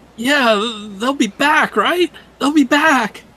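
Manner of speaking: very high, whiny, pleading voice. A character under questioning answers in a pleading, whiny voice. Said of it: "even more like pleading and more whiny".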